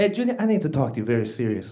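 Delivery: low, fatherly dad voice. Retelling how the dad came to the door at night: imitating his dad. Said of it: "my dad comes to my room".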